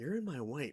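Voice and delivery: play-acted very calm, soft, simple, no hesitation. Retelling a short scene where Joker blocks Batman: imitating Joker calmly. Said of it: "the way he goes very calmly".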